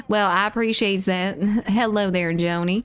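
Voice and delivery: put-on Southern accent. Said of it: "we're doing the Southern accent".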